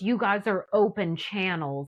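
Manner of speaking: ordinary delivery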